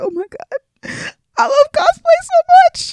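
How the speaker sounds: acted teary sob-talk, very high and slow. Retelling what was said on a cosplay panel: imitating own crying voice. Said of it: "I cried 'cause I can't talk about po-, cosplay without crying".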